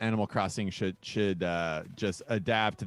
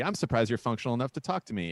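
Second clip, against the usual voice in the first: usual speaking voice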